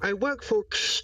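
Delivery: high loud voice.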